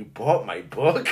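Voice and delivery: mock wary, creeped-out, suspicious, low and hushed. Speaker retells an author's reaction when shown her own book, imitating her suspicious tone. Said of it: "she had that tone like I'm stalking her".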